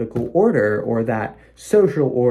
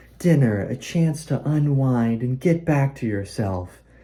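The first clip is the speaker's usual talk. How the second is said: calming, gentle, soft, low ad voiceover voice. Recalling a woman's line from an ad he remembers, soft, soothing HelloFresh ad voice. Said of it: "this real soft, soothing, low voice".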